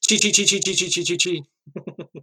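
high, urgent, stuck-record stuttering repetition. Imitate Hung when she really wants Chi to hurry up at a task, imitating Hung stuttering. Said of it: "it sounds like she's stuttering because she's like".

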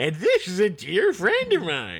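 hammed-up delivery with big swooping pitch. Repeating the other speaker's impression line back: imitating an imitation of Will Forte. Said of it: "Does he talk like that on the thing?".

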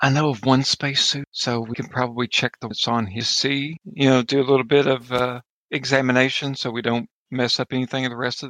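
speaking in a hushed tone. Speaking as their character to companions beside them, in a hushed voice. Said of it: "I kind of say in a hushed voice".

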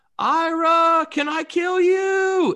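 very high, very loud, very slow, drawn-out shriek. Retelling what one of the hunters screamed out in the blind: imitating a scream. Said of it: "he screamed out".

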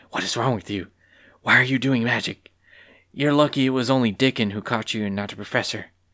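whispering angrily. A student turns to companions caught doing magic, angry whisper. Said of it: "Chadlin turned to them angrily and whispered".

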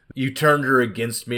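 ordinary delivery

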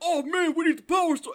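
loud, very high, belted-out hero call. Comparing the manly Red Ranger with another character: Jason impression. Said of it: "That is a really good impression of Jason".

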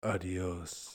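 deliberately deep, throaty put-on voice. Friends taking turns doing a deep voice: put-on deep voice. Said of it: "You have to do deep voice".

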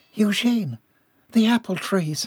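pressing, urgent tone. Ellie calls to Eugene, urgent. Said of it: "Ellie's voice was urgent".

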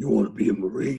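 put-on intense recruiter voice. Recalling meeting a marine recruiter, imitating the intense recruiter. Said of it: "barrel-chested behemoth, like".

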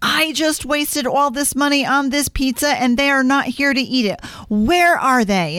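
worked-up, indignant, high-pitched ranting. Recounting someone's outburst when the pizza arrived, retelling a yell. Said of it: "threw his arms up in the air and started yelling".

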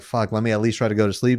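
ordinary delivery

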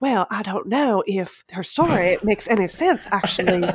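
put-on every word clipped, rich Southern accent. Imitating a rich reality-TV villain questioning a story: clipped rich Southern accent. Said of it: "the Southern accent, but ... clipped".

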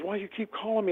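mock heated, irritated woman's voice. Retelling a scammer's reply after being called back: imitating an angry woman. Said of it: "Man, she was hot".

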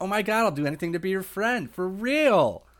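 very high, squeaky, over-the-top gushing. Describing the AEW podcast host as a podcaster: over-the-top Aubrey impression. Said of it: "She just seems like so way over the top".

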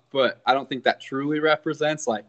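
ordinary talk

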